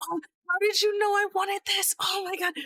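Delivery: put-on thrilled, excited child voice, pitched very high. Voicing a character who opens a bag of toys: excited kid voice. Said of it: "lights up excited".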